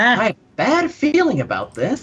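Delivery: put-on cartoon voice, loud, high, sing-song, big swoops. Quoting a famous Star Wars line: Jiminy Cricket voice. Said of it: "an impression of Jiminy Cricket?".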